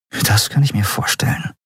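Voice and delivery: murmured, mumbled. A narrator reads Endriel's reply in a story, murmured. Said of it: "murmelte Endriel".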